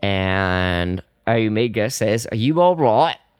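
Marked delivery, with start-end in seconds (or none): 2.3-3.1 bad put-on Cockney accent, higher pitched. Speaker recounting a show's plot, voicing Omega, bad Cockney accent as Omega. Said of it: "That was Cockney, not Australian".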